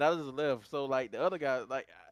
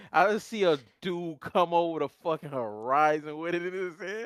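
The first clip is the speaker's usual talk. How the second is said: ordinary talk, nothing marked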